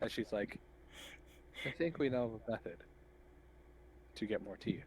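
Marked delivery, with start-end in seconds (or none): 1.6-4.8 hushed, breathy whisper under the breath. A character leans toward a companion to suggest a plan, in a hushed voice. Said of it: "pantomimes to keep a hushed voice".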